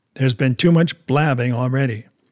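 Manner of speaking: ordinary delivery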